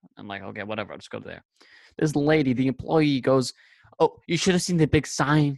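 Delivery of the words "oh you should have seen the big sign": very rude, raised-pitch remark. Telling of a shop employee's remark, the speaker quotes her, mimicking a rude tone. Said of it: "And it's like very rude tone".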